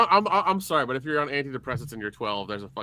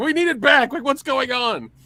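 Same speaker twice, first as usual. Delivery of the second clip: very high, loud, frantic acted panicked outburst; 11 semitones higher, 5 dB louder than usual. Retelling how people reacted to a change: imitating people freaking out. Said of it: "everybody freaked the fuck out and was like".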